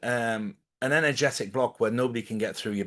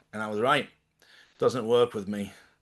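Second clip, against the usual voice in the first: plain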